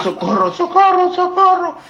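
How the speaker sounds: shrill, very high-pitched, loud yelling. Telling how a man was carried out with his legs in the air, imitating him shouting for help. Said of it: "y gritando".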